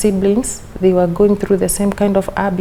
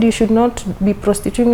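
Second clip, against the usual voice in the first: plain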